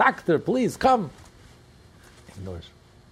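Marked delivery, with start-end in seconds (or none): 0.0-1.1 put-on refined eloquent French voice, much higher, louder. Telling a joke about a daughter in labor calling the doctor, in a higher voice. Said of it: "in a higher voice".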